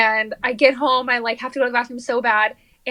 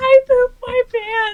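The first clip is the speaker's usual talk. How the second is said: very high, drawn-out tearful wailing sob; 12 semitones higher, 4 dB louder than usual. Retelling a childhood friend's words after she pooped her pants: imitating someone crying. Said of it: "and she was crying".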